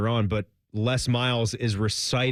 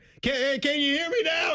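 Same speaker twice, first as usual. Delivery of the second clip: high-pitched, raised mock yell. Retelling how the host yelled into the phone: imitating someone yelling. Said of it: "He starts to yell at him".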